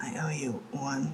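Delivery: very quiet, hushed, slow, softly spoken. Voicing a character thanking Kithos in passing: very quiet voice. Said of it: "really quietly goes".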